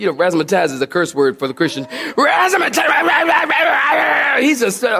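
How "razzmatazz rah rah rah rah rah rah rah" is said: high, barking, ranting yell. Retelling how a man came up and yelled in his face, imitating someone yelling. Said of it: "He starts like yelling in my face".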